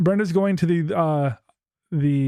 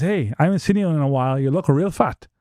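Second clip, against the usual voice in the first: ordinary talk, nothing marked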